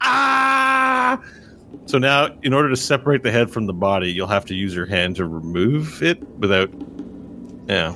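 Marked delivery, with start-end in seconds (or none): 0.0-1.2 yelling out in pain. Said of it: "he's yelling out in pain".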